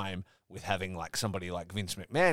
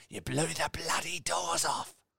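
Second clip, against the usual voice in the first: put-on voice pitched way up, weak, rough, creaky; 9 semitones higher than usual. Joking about films after Michael Caine is mentioned: Michael Caine impression. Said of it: "I am not good at doing a Michael Caine impression".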